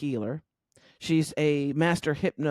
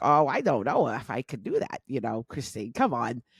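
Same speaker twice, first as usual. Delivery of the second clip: put-on New York Brooklyn accent; 3 semitones lower than usual. Retelling Barbara's reply to the suggestion of a podcast, imitating Barbara's Brooklyn accent. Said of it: "the Brooklyn accent".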